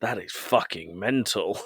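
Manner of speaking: dead dry delivery. Retelling a scene where Ted announces a plan, the speaker quotes Roy's reply: Roy's deadpan, imitated. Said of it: "Roy turns completely deadpan and goes".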